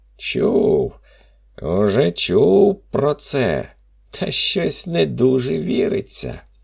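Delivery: scoffing, derisive tone. The forest spirit answers François's request for an ember: mocking. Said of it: "кинув глузливо".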